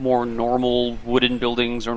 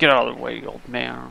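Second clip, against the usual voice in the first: muttered grumbling. Voicing ship passengers pushing past on a dock: muttering passenger. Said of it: "mutter to themselves and bump into you".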